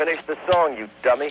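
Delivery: high, angry, surly crowd shouting a jeer. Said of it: "They began to shout".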